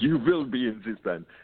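put-on heavy German accent, laid on thick. Retelling how the drummer asked him to join the band: Ray's thick German accent. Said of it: "in his big thick German accent".

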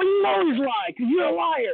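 very high-pitched yelling. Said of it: "And she's like".

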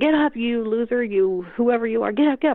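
put-on high, barking drill-sergeant yell. Speaker retells yelling at those who fell during games, retelling drill-sergeant yelling. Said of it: "yelling at them like a drill sergeant".

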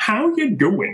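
very high, strange squeaky voice. Asked how he does Peter Griffin, the speaker demonstrates a Peter Griffin voice. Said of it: "asking questions in a really weird tone".

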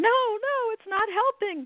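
very high screech in pain. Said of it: "he starts screeching".

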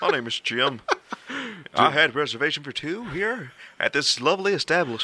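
polished on-air announcer delivery. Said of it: "why do you sound like you're talking on the radio".

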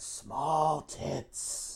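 hoarse, raspy, sinister and creepy whisper. Retelling a man sneaking up to whisper in a woman's ear: raspy Crypt Keeper whisper. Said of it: "whispers in her ear in this raspy, crypt keeper-like voice".

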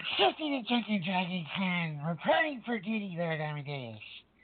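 put-on drunken, sloshed, well-into-the-drink voice. Introducing himself in character as a drunken clown: acting drunk. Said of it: "you're a little more sloshed than usual".

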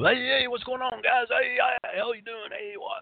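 fake hyped-up showman voice, very high pitch. Showing the hyped-up entertainer style never achieved: put-on high-energy entertainer voice. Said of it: "I never achieved that level of".

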